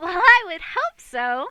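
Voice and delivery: delighted, very happy, very high-pitched and very loud. An event advisor answers a man asking about the event, very happy. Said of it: "she says very happily".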